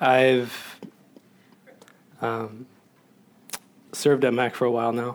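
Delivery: emotional, choked-up voice, catching near tears. Introducing himself to the congregation, choking up with emotion. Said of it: "Sorry, it's a little emotional".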